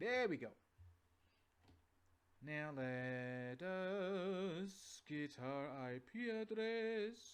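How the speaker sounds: Transylvanian-sounding accent. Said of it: "I sound like a half Transylvanian".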